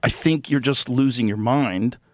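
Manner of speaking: plain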